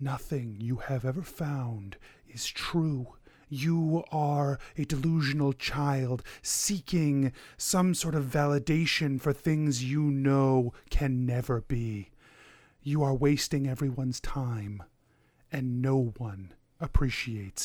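whispering voice. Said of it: "the whispers begin to pour into your mind".

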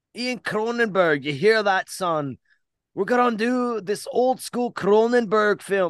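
loud, high, horrible put-on Scottish accent. Introducing a cronenberg film episode to a listener named ian, bad scottish accent. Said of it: "I'm trying my best to do Scottish".

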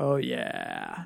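very low, soft, rough, creaky, hammy seductive voice. Hyping some Ultimate Edition talk, in a mock sexy voice. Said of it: "That's my sexy voice".

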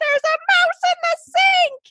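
very high, shrill, panicked screaming. Retelling screaming for her husband: retelling her own screaming. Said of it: "And I'm like screaming".

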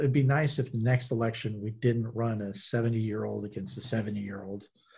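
normal talking voice

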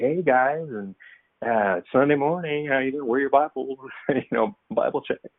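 fake casual, high-pitched put-on chatty voice. Speaker recalls greeting people at church on Sunday morning in his put-on barbecue voice. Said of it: "I would be barbecue voice".

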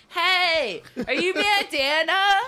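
yelling loudly over loud music. Acting out dancing and yelling to someone next to you: yelling over loud music. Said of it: "you're trying to yell to someone who's next to you like over the music".

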